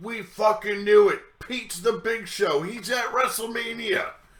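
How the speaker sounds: play-acted, shrill, very high, excited group screaming. Telling how friends at a bar reacted to WrestleMania, retelling a group screaming. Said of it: "and they start screaming".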